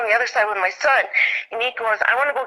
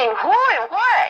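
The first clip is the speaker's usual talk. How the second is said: high, frantic, freaked-out, panicked delivery; 7 semitones higher than usual. Retelling asking the son who and what: imitating herself freaking out. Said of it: "I'm, like, freaking out".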